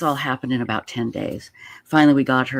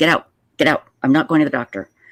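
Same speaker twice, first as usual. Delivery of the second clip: harsh, stubborn, mean, angry delivery; 3 semitones higher, 4 dB louder than usual. Retelling how someone ordered them out of her bedroom: imitating someone sounding mean. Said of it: "I'm making her sound so mean".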